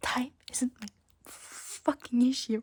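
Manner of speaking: angry, furious voice. Complaining about being offered extra exam time: angry. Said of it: "I am so mad right now".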